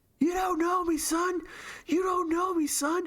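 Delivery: very high, shrill, high-pitched screaming. Retelling how David Goggins pushes himself: imitating David Goggins screaming. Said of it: "And he screams".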